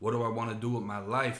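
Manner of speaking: ordinary talk, nothing marked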